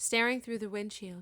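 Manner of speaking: plain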